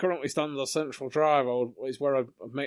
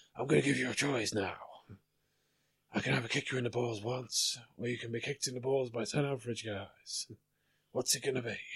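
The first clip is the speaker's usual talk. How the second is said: hard-boiled, hard-nosed movie cop voice; 6 dB quieter than usual. Trying a tough-guy movie impression, ends up Dirty Harry impression. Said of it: "I was gonna do a Dirty Harry".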